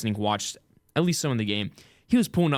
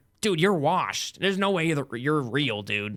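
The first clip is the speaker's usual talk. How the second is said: put-on cocky, mouthy little kid voice; 4 semitones higher than usual. Reenacting a game chat, playing the little kid who trash talks. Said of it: "I'll be the little kid".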